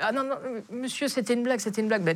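mock frantic, high, panicked backpedaling tone. Speaker retells a kid's reply to him, mimicking a panicked kid. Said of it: "kid backpedals, panicked".

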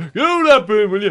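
high, loud, mocking shout. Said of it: "You were shouting at the actor".

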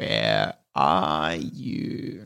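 very low, rasping, croaky monster voice. A creature calls from behind someone hiding in the darkness, in a croaky creature voice. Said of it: "that croaky voice".

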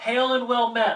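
very loud, very high, booming yell. Standing in Juggernaut Alley looking for someone, yelling really loudly. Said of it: "I'm just gonna yell really loudly".

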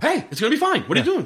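manic fast talking. Retelling a cop talking a jumper down: imitating manic fast talking. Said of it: "he's just so fast talking".

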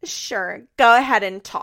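play-acted loud, nastiest possible voice. The speaker retells Farrah's reply to Nessa's question: imitating Farrah's nasty voice. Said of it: "And in the nastiest voice".

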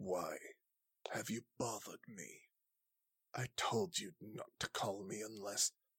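very quiet, hushed character voice. Voicing a woman in a mirror who speaks Draconic, annoyed at being called. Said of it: "And she is speaking in Draconic".

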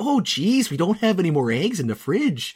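put-on thick North Dakota accent. Praising the mom's delivery, the speaker imitates her thick North Dakota accent. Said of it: "It was so like North Dakota".

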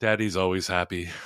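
put-on sad voice. Retelling an internet dad answering his wife's question, mock sad. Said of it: "And then he just sadly goes".

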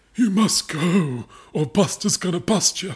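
trembling, quavering, tremulous voice. Reading the Duchess's warning line in a story, trembling voice. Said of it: "The Duchess's diction trembled".

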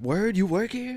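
high, slow, surprised voice.

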